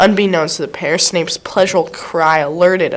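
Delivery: ordinary delivery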